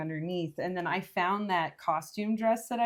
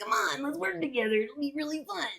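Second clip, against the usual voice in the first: sleazy salesman voice, pitched higher; 8 semitones higher than usual. Imitating a character's pitch to trick people: sleazy charming salesman Beetlejuice voice. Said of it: "kind of sleazy, but almost kind of charming, like, salesman guy".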